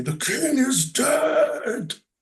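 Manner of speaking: magnified booming voice, very high, loud, drawn-out. Casting a spell in a game to magnify the character's voice, booming, loud voice. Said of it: "voice really booming and loud".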